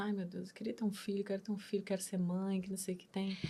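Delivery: play-acted speech through sobs, tearful. Retelling a plea made in the shower, imitating own past crying. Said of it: "eu chorando, falando assim".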